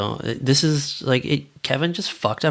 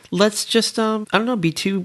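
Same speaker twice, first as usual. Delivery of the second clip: put-on high, pitched-up awkward teen boy voice. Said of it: "And he's like".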